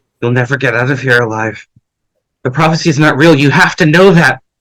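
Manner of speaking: voice of dying last words. Voicing a wounded foe after a fight: Kipper speaking while dying. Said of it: "holding her wound as she's dying".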